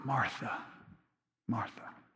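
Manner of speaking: hushed, very quiet, gentle, comforting voice. Speaker acts out how he says martha's name, retelling in a comforting voice. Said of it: "He says it in a voice that is comforting".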